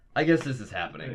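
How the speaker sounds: ordinary delivery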